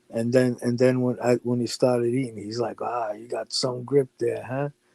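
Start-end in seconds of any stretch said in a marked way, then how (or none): 2.9-4.7 imitated teasing ribbing, quieter. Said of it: "fucking Lefty started breaking his balls".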